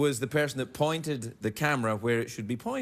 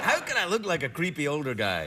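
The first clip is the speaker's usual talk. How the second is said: ordinary delivery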